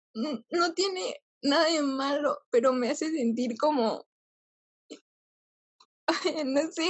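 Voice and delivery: tearful, crying while talking. Explaining how crying over everything feels: crying while talking. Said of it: "ahorita estoy llorando".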